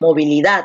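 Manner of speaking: movilidad with the final syllable -dad stressed. Syllabifying movilidad to find the stressed syllable: stress on 'dad' in movilidad. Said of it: "la fuerza de voz está aquí en dat".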